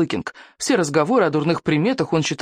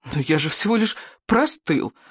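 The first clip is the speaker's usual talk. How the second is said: usual speaking voice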